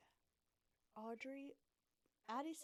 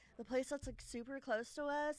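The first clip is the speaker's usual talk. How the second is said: usual speaking voice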